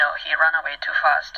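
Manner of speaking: ordinary delivery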